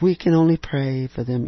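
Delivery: gentle, soft-spoken tone. A speaker shows another way of saying it, in a soft voice. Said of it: "We can do it with this soft voice".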